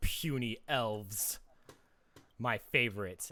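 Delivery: slow, hearty, gloating villain chuckle, laughing monster voice. Voicing a creature that chuckles heartily at the elves: hearty chuckling villain voice. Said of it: "a big hearty chuckle and says".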